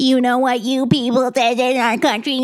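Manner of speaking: put-on yelling. Speaker recounts yelling at a line-practice partner who served in the army, retelling angry yelling. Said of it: "I'm yelling at him for serving the country".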